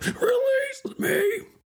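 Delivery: very high, hard, straining shout. Imagining Brent Spiner on the toilet, imitating Brent Spiner straining hard. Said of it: "I said that so hard I had to cough".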